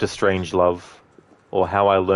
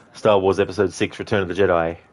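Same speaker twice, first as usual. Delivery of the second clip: plain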